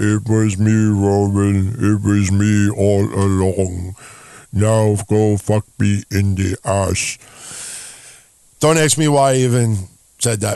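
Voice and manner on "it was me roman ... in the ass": very low, slow giant rumble, Roman drawn out. Imitating a wrestler revealing himself to Roman Reigns: Erick Rowan impression sounding like Andre the Giant. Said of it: "I always sound like Andre the Giant when I do his impression".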